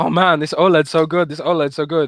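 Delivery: teasing, mocking tone. Retelling how the other speaker always talked while gaming: mocking imitation of a friend. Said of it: "I was mocking you for always talking".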